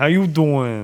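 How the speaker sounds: put-on Italian-style character voice. Imitating a sitcom character's catchphrase: Joey Tribbiani voice. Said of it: "It's gonna be Joey Tribbiani from Friends".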